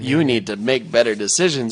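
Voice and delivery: ordinary talk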